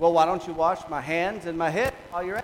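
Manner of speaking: loud, heavily sarcastic tone, laid on thick. Retelling Peter's reply when Jesus offers to wash his feet, retelling a sarcastic remark. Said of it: "And sarcastically".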